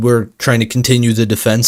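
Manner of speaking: plain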